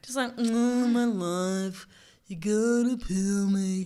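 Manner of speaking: very slow, mopey, sorry-for-itself onion voice. Imagining what a talking onion would sound like, the speaker does a mopey onion voice. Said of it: "that's a pretty good onion voice".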